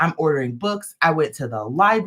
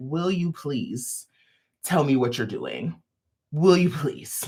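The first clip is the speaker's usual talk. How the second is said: put-on overeager, overenthusiastic tone. Retelling running up to a woman at Vogue Knit Live: imitating own overeager plea. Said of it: "probably with more enthusiasm than I needed to".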